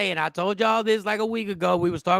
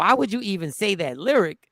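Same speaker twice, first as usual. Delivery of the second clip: ordinary delivery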